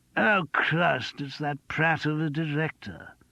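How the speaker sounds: stage whisper, slow and carrying. Reading a novel aloud, an actor mutters about the director: stage whisper. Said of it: "in a well-judged stage whisper".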